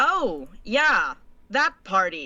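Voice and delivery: tense, strained, stiff, very slow voice. Voicing a character invited to an unknown party: stressed and stiff. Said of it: "she kinda stresses a little".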